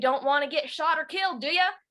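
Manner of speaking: put-on cheeky elderly man voice. Showing the voices from her book narration, voicing old Mister Thompson. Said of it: "old Mister Thompson ... he says".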